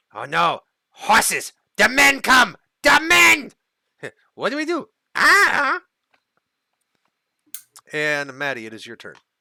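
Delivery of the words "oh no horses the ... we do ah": frightened, panicked goblin voice, higher and louder. Voicing a panicking goblin who hears approaching horses: panicked goblin voice. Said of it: "And the goblin's like".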